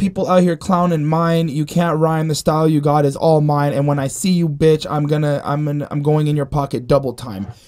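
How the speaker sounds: normal talking voice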